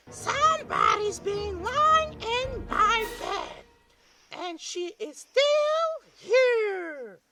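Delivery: high, squeaky, loud, slow little cry. Reading Goldilocks aloud, as Baby Bear crying out at his bed: high squeaky voice. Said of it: "his little baby voice was so high and squeaky".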